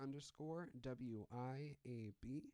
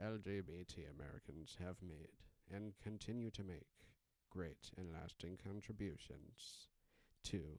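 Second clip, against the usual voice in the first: narrator-style voice, much lower; 6 semitones lower than usual. Reading a Pride Month proclamation aloud, speaker does it as Morgan Freeman. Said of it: "I'm just gonna do it as Morgan Freeman".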